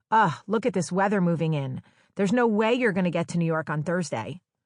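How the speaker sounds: ordinary delivery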